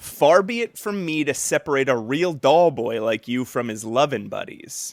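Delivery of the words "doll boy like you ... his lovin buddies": normal talking voice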